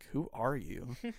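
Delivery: openly disgusted, repulsed, put-off tone, play-acted. Retelling how he looked at the speaker and spoke: imitating someone sounding disgusted.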